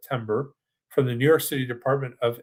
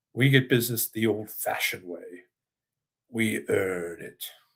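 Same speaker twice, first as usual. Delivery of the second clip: put-on deep, low-pitched English accent; 4 semitones lower, 4 dB quieter than usual. Retell a man's line from his popular commercial, imitating a deep English accent. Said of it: "in his deep English accent".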